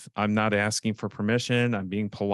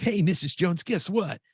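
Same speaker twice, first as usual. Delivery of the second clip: super energetic, bursting with energy, pitched up; 9 semitones higher than usual. Coach showing listeners a possible opening on their calls, super energetic. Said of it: "Am I supposed to be super energetic?".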